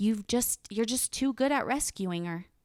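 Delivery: dry, backhanded, mocking sarcastic tone. Retelling what hospital staff said about rescuing her: imitating a sarcastic remark. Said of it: "in a sarcastic way".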